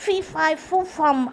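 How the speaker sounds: usual speaking voice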